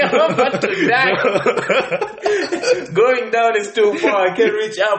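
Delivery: high, slow, panicked delivery with laughter.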